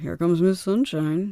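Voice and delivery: sarcastic, jabbing tone. Retelling what was said when entering the room: imitating a sarcastic tone. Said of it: "In a sarcastic way?".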